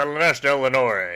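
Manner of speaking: very loud, booming, overdramatic delivery. Imitating a game character saying a name: overdramatic Turalyon impression. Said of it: "it's so overdramatic".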